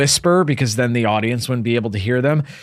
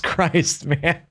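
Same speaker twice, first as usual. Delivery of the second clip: plain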